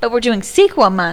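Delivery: mock sassy delivery. Retelling repeating a point to a husband: imitating own sassy tone. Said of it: "you sounded really sassy when you said that".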